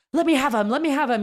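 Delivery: put-on high, wild, crazy, laid-on Russian accent. Imagining Putin in the Kremlin being held back, crazy Russian accent. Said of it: "with his r- crazy Russian accent".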